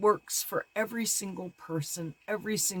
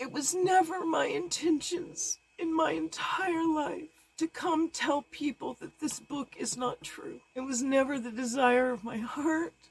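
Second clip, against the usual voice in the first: terrified, crying excessively, weeping heavily; 8 semitones higher than usual. Speaking publicly in fear about what they've been asked to do, crying excessively. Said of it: "I'm crying excessively because I'm terrified".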